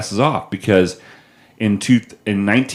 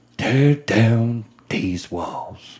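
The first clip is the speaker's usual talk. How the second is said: slow, deliberate, drawn-out presidential speech style; 3 dB quieter than usual. Quoting a famous speech after hearing it named: Ronald Reagan impression. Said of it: "Not bad".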